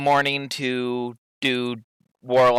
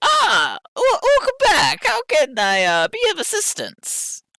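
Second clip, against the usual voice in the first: put-on high swooping older-lady voice. Game master voicing the older lady as the players arrive at her place: Ruth, older lady voice. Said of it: "older lady there just like".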